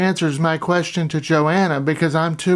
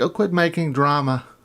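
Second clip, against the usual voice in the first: ordinary delivery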